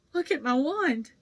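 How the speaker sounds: shaky, trembling, high, unsteady voice. Narrator reads a character's words after his wand snapped, in a shaky voice. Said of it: "said Ron in a shaky voice".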